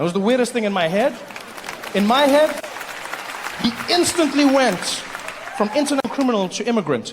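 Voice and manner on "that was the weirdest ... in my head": plain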